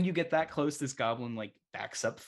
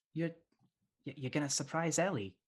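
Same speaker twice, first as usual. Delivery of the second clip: female goblin voice, much higher pitch; 4 semitones higher, 3 dB quieter than usual. Voicing a girl goblin character, girl goblin voice. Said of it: "this is a a girl goblin, and she says".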